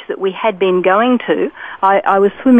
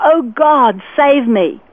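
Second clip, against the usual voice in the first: high, very slow, very drawn-out pleading tone; 5 semitones higher than usual. Retelling calling for help in the water before a tsunami wave: retelling a shout at the top of voice. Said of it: "I just shouted out at the top of my, my voice".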